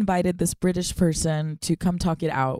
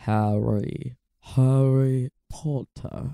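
throaty, low put-on voice; 5 semitones lower than usual. Trying an impression again for the others, throaty impression. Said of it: "This is a throatier impression than I thought".

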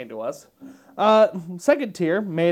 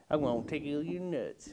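put-on sweet old southern lady voice, lower and quieter; 3 semitones lower, 12 dB quieter than usual. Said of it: "wholesome old woman with a southern accent saying".

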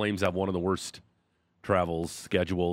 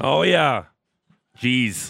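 rough, very loud, pitched-up voice; 6 semitones higher, 8 dB louder than usual. Sports radio host on air as the show opens, rough voice. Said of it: "Sound a little rough this morning".

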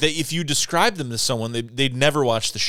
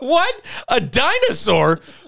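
very high, swooping, gobsmacked, shocked disbelief; 12 semitones higher, 5 dB louder than usual. Retelling his own reaction after hearing the warning: imitating own taken-aback reaction. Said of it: "I was so taken aback".

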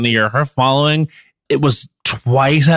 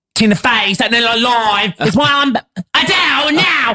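put-on London Cockney accent; 10 semitones higher than usual. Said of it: "she kind of says it like that in that same exact voice I just did".

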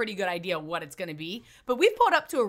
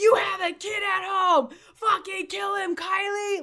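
play-acted, very high, high-pitched sports-mom cheering yell; 11 semitones higher, 3 dB louder than usual. Telling Kyle how they screamed for him from the crowd, retelling own screaming. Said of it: "I was out there screaming like I'm your mom".

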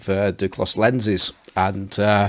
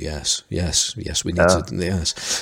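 mock, really somber, very slow and heavy; 4 semitones lower, 4 dB quieter than usual. Retelling how the other speaker just answered: imitating Johnny's somber voice. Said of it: "your voice just went really somber there".

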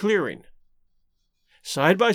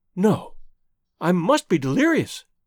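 plain

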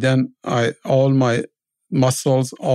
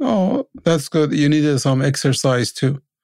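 acted sarcastic, teasing, sing-song quip; 2 semitones higher than usual. Retelling a passing driver's remark about the long walk: imitating a sarcastic remark. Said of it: "In a sarcastic way".

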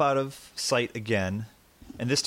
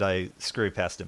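usual speaking voice

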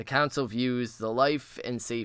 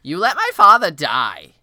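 very loud, swooping, accusing shriek; 6 semitones higher, 16 dB louder than usual. Reading a scene aloud where a young king accuses a knight: shrieking accusingly. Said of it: "Joffrey shrieks out".

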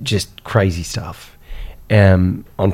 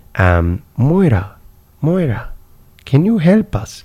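put-on very drawn-out, slow, sing-song Indian accent; 7 semitones higher than usual. Retelling the speaker's brother asking the woman for help, Indian accent. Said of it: "my brother had an Indian accent".

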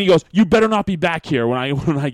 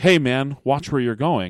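joking, playful mock-scolding tone, all in fun. Retelling what the kid said after a bump in the hallway: imitating a playful tease. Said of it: "in a playful way".

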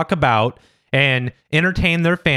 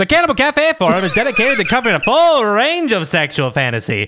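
mid-Atlantic accent, pitched up; 7 semitones higher than usual. Asked to keep going, reading a text aloud in a mid-Atlantic 50s diner employee voice. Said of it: "keep going with your mid-Atlantic 50s diner employee voice".

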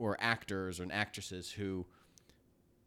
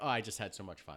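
plain

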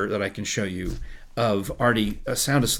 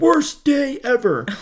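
shrill, very high-pitched, loud scream; 7 dB louder than usual. Telling how he reacted on hearing his show was canceled, retelling a scream. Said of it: "he screamed".

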